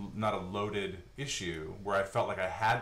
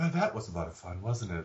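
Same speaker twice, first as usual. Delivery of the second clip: sweet, gentle female announcer voice. Describing the voice heard at the end of a TV episode, soft female voice. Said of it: "this very soft female voice will come in".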